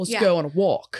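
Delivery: put-on frat boy voice with a New Jersey accent. Putting a voice to Bean as asked: Bean as Jersey frat boy. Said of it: "I don't know why I made him from Jersey".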